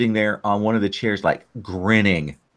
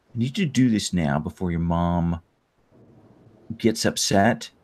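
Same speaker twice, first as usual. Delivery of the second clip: stern, very serious dad voice, lower and quieter; 3 semitones lower, 4 dB quieter than usual. Voicing the dad who pulls the player in: very serious. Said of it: "more serious than you've, you've heard him do".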